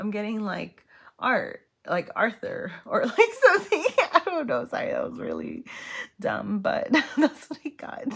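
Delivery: giggling mid-sentence. Giving a card reading and laughing at own guess: laughing while talking. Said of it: "Why am I cracking up at myself?".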